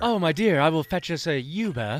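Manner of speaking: posh, grand-sounding voice, faintly French. Joking about calling a car for a companion: put-on fancy French-sounding voice. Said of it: "you sounded French".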